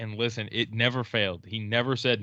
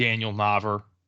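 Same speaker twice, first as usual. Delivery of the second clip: r sound added after final a. Speaker recalls a Red Sox fan pronouncing names, imitating Rhode Island-style accent. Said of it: "he had a knack for pronouncing his A".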